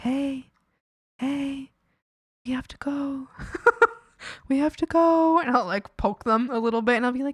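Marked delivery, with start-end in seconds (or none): 0.0-5.4 easy, slow, drawn-out, unhurried voice. Showing how they gently wake someone when running late: quiet voice. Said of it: "I'll be, like, so quiet about it".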